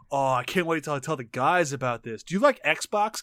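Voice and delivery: put-on teenage boy voice. Retelling a scene where the kid reacts: imitating the teenage kid. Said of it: "he's just like".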